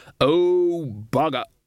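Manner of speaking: hollow, empty-sounding voice like an echo. A voice cries out just before crashing into the far wall of the gorge: hollow voice. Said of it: "a hollow voice to say".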